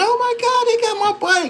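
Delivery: mock frantic, shrill, high-pitched scream. Retelling a boy appearing as they take his bike: imitating a boy screaming. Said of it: "appear out of nowhere screaming".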